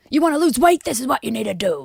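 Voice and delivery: pushy yelling. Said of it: "someone yelling at you about their favourite".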